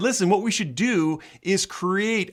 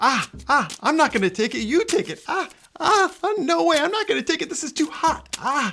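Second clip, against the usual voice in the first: high, skittish yelping; 8 semitones higher than usual. Juggling a hot potato that stands for free speech: imitating Twitter and Facebook. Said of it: "my impression of Twitter and Facebook".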